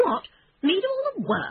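cross, very high-pitched complaining protest. Reading a character's reply after being told to invite all the friends, cross. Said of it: "Said Toad crossly".

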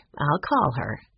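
ordinary delivery, nothing marked

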